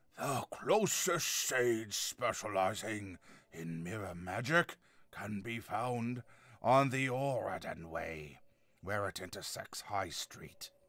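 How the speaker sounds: playful put-on deep, slow gravelly voice. Narrating a passage about the sources of Earth: fun gravelly voice. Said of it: "Tried to have a fun, gravelly voice there".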